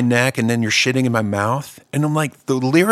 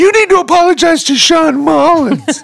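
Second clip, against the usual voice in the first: very high, shrill, loud, frantic woman's voice; 8 dB louder than usual. Retelling a confrontation over a joke, imitating a woman freaking out. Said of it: "she's like freaking the fuck out".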